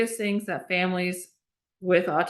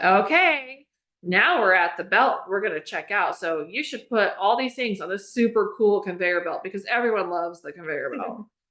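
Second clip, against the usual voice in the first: ordinary talk, nothing marked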